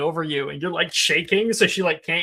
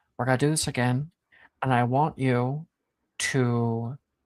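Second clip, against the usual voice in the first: close, intimate whisper, lower; 6 semitones lower than usual. She comes over and whispers into someone's ear; whispering. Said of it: "she whispers something in Bai's ear".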